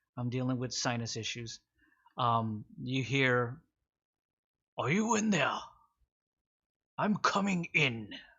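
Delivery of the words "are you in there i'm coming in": big, booming, resounding voice, pitched up. Voicing someone calling from the entrance of the cave, use a booming voice. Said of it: "in a voice that is certainly just booming voice".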